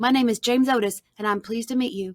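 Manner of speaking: ordinary delivery, nothing marked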